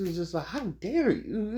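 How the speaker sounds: high, slow, stretched-out outraged voice.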